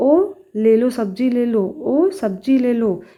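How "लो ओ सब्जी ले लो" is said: ordinary talk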